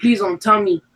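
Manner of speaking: acted crying, tearful voice. Retelling answering a phone call at work: reenacting own crying plea. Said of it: "I was crying".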